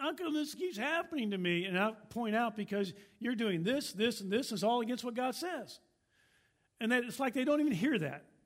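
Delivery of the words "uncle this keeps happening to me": acted-out high, whiny, woe-is-me whining. Uncle quoting someone who keeps complaining to him: imitating a whining voice. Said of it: "there's like a whining voice".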